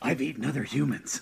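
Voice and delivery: rough, gravelly, weathered voice. Voicing an imagined avatar with a gravelly, weathered voice. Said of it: "he'd have a really gravelly voice".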